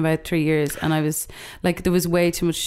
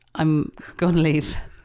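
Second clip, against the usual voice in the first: ordinary talk, nothing marked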